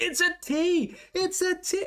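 mock very high, frantic scream. Retelling how someone couldn't hear them, the speaker re-enacts screaming at the computer. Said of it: "I'm screaming at my computer".

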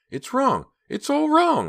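very high, loud, frantic swooping panicked shriek. Narrator reading Pam on the phone to Clay, panicked shriek. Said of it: "Pam shrieked, unable to contain her panic".

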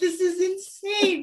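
high-pitched starstruck freakout. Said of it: "You're like".

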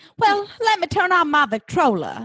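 put-on high-pitched old Southern lady voice. Speaker jokes about saying a word like an old Southern lady, Patricia Altschul Southern lady voice. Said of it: "I have to say it like an old Southern lady".

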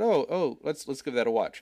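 ordinary delivery

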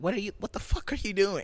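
high, alarmed, fretful, worried woman's voice. Retelling how a woman got out of her car, imitating a worried woman. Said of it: "all worried and shit".

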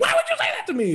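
very high, squeaky, worked-up excited voice. Retelling how Rolf talks when excited: imitating Rolf's high-pitched voice. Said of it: "really high-pitched and he's like".

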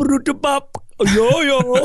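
put-on Jamaican accent, pitched very high. Describing characters with different points of view he planned to voice: imitating a jamaican accent. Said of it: "a Jamaican guy just show up and go".

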